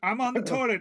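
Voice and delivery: shrill, piercing, high, loud yell. Retelling a movie scene, imitating Dante shouting. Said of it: "opens the door to shout".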